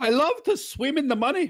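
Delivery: very high cartoon character voice. Doing his best Scrooge McDuck impression on the show: Scrooge McDuck voice. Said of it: "That's my best Scrooge McDuck".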